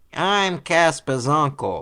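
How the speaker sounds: cartoon character voice, high, loud. Mocking the casting, the speaker imitates a cartoon voice actor. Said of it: "voice actors to be like".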